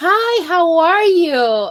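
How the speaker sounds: acted-out bubbly, excited, high, drawn-out delivery. Demonstrating how the speaker greets people, imitating own excited greeting. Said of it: "I sound so excited when I talk".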